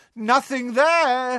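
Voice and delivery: shrill, very high-pitched shout. A narrator reads a man dodging jets of light as he calls out, shouted. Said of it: "he shouted".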